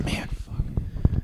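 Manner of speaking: unvoiced, muttered whisper under the breath.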